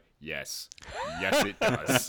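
put-on bone-dry deadpan, matter-of-fact, no reaction. Recalling a woman's answer to the speaker's remark: imitating a deadpan reply. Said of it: "she just looked at me like deadpan".

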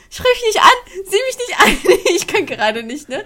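very high, loud, acted giggling through the words. Recounting what she said to Juline while they kept cracking up: retelling a laughing fit. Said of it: "musste wieder von vorne anfangen zu lachen".

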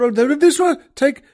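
almost shouting. Recounting an actress suddenly crying out in a scene, retelling a near-shout. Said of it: "she suddenly just almost shouts out".

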